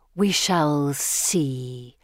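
hissed out slowly, serpent-like. Narrator reads the Gorgon's reply after Pippa says Gemma is of the Order, hissing. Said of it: "the Gorgon hisses".

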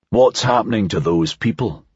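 ordinary delivery

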